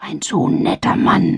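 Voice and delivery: loud stage whisper. A mother leans to the narrator after a man greets her, loud stage whisper. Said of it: "Flüsterte die mir unüberhörbar zu".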